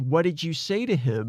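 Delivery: normal talking voice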